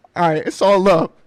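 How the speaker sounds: mock breaking voice, cracking, on the verge of tears. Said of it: "his voice cracks 'cause he's about to cry".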